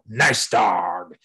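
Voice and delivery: harsh, gruff voice. Demonstrating speaking to a dog that walks into the house, in a gruff tone. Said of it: "you just get gruff with your tone".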